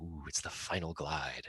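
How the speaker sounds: put-on reverent, awed, mystical tone. Recalling how people talked when starting out in soaring, mock-mystical tone. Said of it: "people would say it with this sort of mystical connotation".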